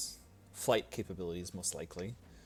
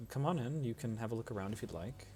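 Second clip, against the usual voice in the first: plain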